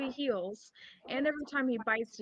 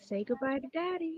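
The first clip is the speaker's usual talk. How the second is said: put-on menacing whisper, higher; 4 semitones higher than usual. Playing a character who closes in on an enemy: whispering menacingly in character. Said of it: "I'll whisper in her ear".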